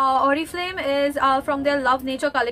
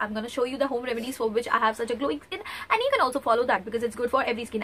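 speaking too fast in an excited rush. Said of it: "I know I'm speaking too fast".

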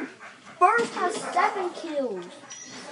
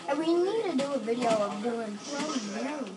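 plain

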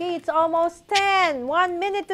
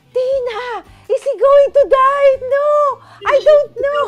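imitated screaming; 9 semitones higher, 10 dB louder than usual. Retelling watching a movie with tina: retelling a scream. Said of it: "I was, like, screaming".

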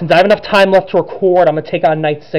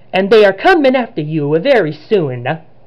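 bad put-on Italian accent; 3 semitones higher than usual. Reading a game cutscene's lines aloud, in a bad Italian accent as Luigi. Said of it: "I'm sorry if that's a bad Italian accent".

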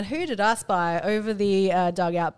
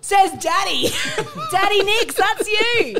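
put-on very high, loud shout, drawn out; 12 semitones higher, 5 dB louder than usual. Retelling calling out about a T-shirt across a fence: retelling a yell. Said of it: "And so I yelled".

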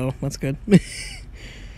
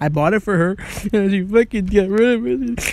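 put-on sobbing through the words, pitched high; 6 semitones higher, 3 dB louder than usual. Playing a game and giving away a diamond ring, the speaker fake crying. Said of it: "Sorry, I'll stop crying".

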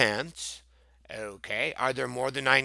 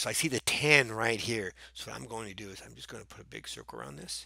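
quiet stage whisper, half-whispered; 2 semitones lower, 7 dB quieter than usual. Circling groups of counters while working a sum: half-whispering. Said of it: "Why are you whispering".

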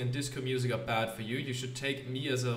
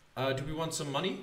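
ordinary talk

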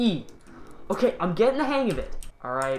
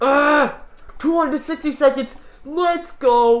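very high, nervous, jittery, pumped-up excitement; 9 semitones higher, 7 dB louder than usual. Playing a game, counting seconds aloud to viewers, shaking with nervous excitement. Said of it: "I am shaking like crazy right now".

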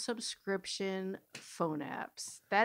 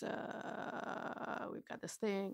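put-on very serious pilot voice, much quieter; 11 dB quieter than usual. Recounting a movie scene, imitating a very serious pilot. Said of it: "Very serious. Pilot voice".

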